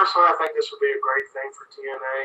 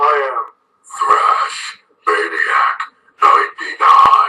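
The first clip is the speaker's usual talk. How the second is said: loud, very slow, drawn-out death metal vocal; 3 semitones lower, 6 dB louder than usual. Introducing yourself by name as a guest: death metal voice. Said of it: "practice my death metal voice for that".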